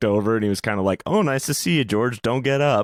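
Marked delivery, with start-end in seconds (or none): 1.0-2.9 sarcastic tone, higher. Retelling a comedian greeting someone in a dressing room: imitating a sarcastic remark. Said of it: "kinda sarcastically".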